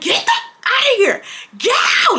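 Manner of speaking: very high-pitched, heated, screaming voice. Retelling an argument with him in her room: imitating her own screaming. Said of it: "I'm screaming".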